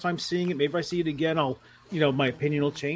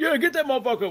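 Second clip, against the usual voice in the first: put-on high, rowdy, egging-on holler; 8 semitones higher than usual. Retelling people in a theater yelling at the screen: imitating someone yelling at the screen. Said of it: "You're yelling at the screen like".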